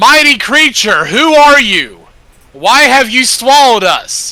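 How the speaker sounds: very loud, high-pitched calling voice. In a role-playing scene, a character calls out. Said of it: "And I call out".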